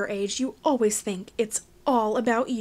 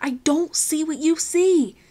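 exasperated, frustrated, slow and pitched up; 6 semitones higher, 4 dB louder than usual. [name], quick to lose patience with Finn, speaks sounding frustrated. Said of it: "He sounded frustrated".

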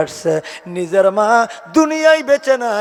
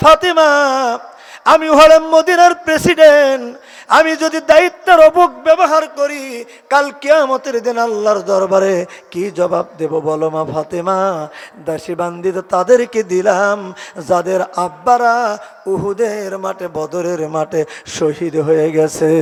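ordinary talk, nothing marked

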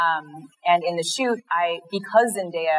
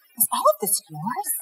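stage whisper, pitched up; 6 semitones higher than usual. Retelling how a beauty expert leaned in, imitating someone half-whispering. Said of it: "leans in and whispers".

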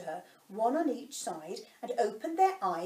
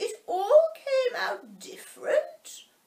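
thoughtful, musing creature voice pitched way up; 14 semitones higher, 6 dB louder than usual. The Mock Turtle speaks to the Griffin: thoughtful Mock Turtle voice.

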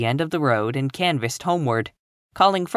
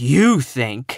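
dismissive, utterly disdainful, scornful, contemptuous tone; 4 dB louder than usual. Miss Eliza answers Catherine's remark with utmost contempt. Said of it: "Miss Eliza's voice expressed the utmost contempt".

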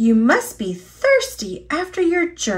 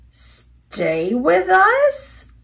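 nervous, anxious, pitched-up repetition; 7 semitones higher than usual. Narrating a story, mr. brown repeats a question back to her, nervous. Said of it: "repeated Mr. Brown nervously".

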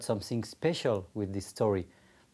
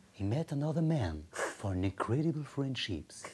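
epic American movie-trailer narrator voice; 3 semitones higher, 4 dB quieter than usual. Asked to do a film trailer with the voice of America, the speaker does an American movie-trailer voice. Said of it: "Can you do the trailer with the voice of America?".

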